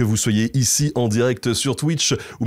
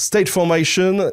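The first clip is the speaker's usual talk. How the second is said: showy English accent with raised pitch; 8 semitones higher than usual. Citing an english thesis title in a french talk, english accent. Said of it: "mon plus bel accent anglais cette fois-ci".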